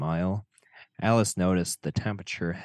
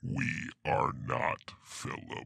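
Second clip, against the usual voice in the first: creepy eerie demonic voice, lower and quieter; 5 semitones lower, 7 dB quieter than usual. Asked to repeat it, voicing the line again: creepy voice as Philip. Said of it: "That was all [name]".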